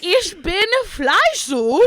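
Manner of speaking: put-on deliberate German accent. Retelling how they read German aloud in class: imitating own put-on German accent. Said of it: "I would literally say it like that".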